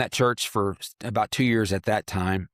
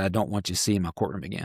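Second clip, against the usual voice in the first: put-on whispered voice; 2 semitones lower than usual. Retelling words said up close after a handshake: imitating a whisper. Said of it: "he whispered and said".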